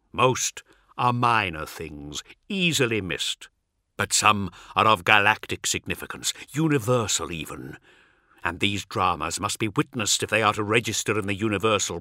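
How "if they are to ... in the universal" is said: plain reading voice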